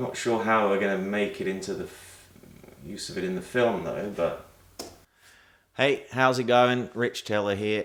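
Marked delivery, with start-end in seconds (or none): 5.8-7.8 higher, put-on Australian accent, presenter-style. Opening a production video as Rich Teller, Rich Teller Aussie accent. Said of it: "Why am I putting on the Aussie accent?".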